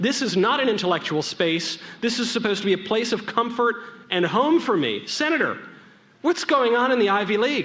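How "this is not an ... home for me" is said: normal talking voice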